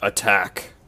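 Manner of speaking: hushed whisper in a character voice. Voicing a character who whispers a command into a mind: whispering in character. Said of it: "I whisper".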